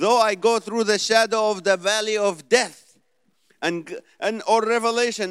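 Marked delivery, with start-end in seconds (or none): 0.0-3.0 put-on heavy Middle Eastern accent, higher and louder. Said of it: "this heavy accent that I can't get through".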